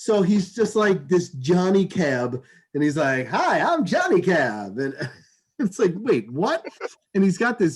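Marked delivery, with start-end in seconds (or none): 3.3-4.8 slow, sing-song cartoonish goofy voice, swooping up and down. Telling a story about an Uber driver, doing the Johnny Cab voice. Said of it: "take a shot every time you do a voice".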